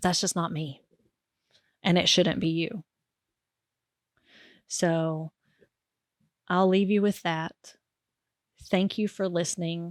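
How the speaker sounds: choked-up, catching voice, close to tears. Ending a talk and thanking listeners, a little emotional. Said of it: "sorry I got a little emotional".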